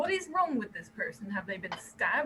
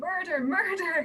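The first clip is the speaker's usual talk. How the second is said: panicked frantic shouting, higher and louder; 3 semitones lower, 5 dB quieter than usual. Retelling yelling a cry into the chaos as a diversion, shouting in panic. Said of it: "I sidle up to Jacob in all of the chaos".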